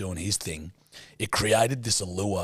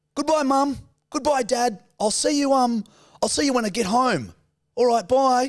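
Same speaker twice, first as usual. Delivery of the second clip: put-on very high, raised, light mild Australian accent; 6 dB louder than usual. Imitating Australians saying goodbye before going overseas: mild Aussie voice. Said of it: "they'd leave talking like this".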